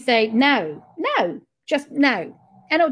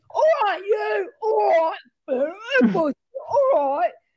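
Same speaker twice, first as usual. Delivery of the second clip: high-pitched, put-on London accent; 7 semitones higher than usual. Talking about a trip to London, repeating the local greeting: London accent. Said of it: "isn't it, the accent?".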